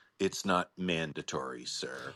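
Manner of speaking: very sinister, menacing, low and quiet. Retelling what a man said on the phone, in a mock-sinister voice. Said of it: "he says in a very sinister voice".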